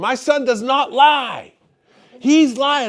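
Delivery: play-acted furious screaming, high and slow. Retelling how a mother picking up her son screamed, imitating a mother screaming. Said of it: "she's screaming".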